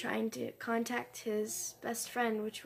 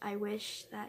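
normal talking voice

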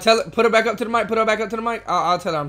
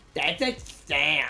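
mocking, low, soft, nerdy know-it-all voice; 6 semitones lower, 6 dB quieter than usual. Mocking another player's remark, repeating it in a mocking nerdy voice. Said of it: "You know how much of a nerd you sound like?".

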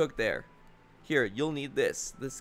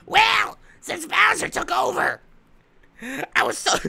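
very high, rough, congested, squeezed-up voice; 5 dB louder than usual. Toad answers Princess Peach about how long he has hidden: congested Toad voice. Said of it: "This toad sounds congested".

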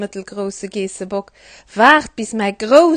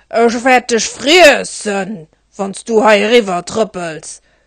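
menacing, mean, nasty bridge troll voice; 4 dB louder than usual. Reading a story aloud, the troll threatens the little goat on the bridge; mean troll voice. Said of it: "Me innert der Brücke hat der Besen allen Troll gelieft. He war grenger, beiser, voller Pelz, an den hat schrecklich scharf Zahn".

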